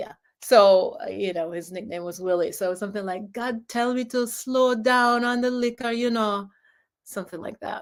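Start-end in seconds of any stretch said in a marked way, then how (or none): 3.3-5.9 clumsy, bad put-on Jamaican accent. Retelling what he said, in a very bad jamaican accent. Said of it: "my very bad flashback to Jamaican accent".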